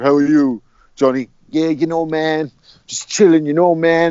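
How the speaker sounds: fake, put-on American accent. Speaker mimics Nelson greeting Coogan in an interview, Nelson's fake American accent. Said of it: "he talks to Coogan in this fake American accent".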